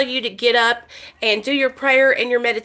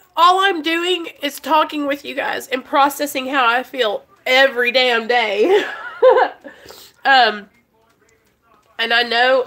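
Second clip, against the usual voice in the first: tearful, crying through the words. Talking to her audience after her best friend's suicide, crying while talking. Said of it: "sorry, I don't mean to cry".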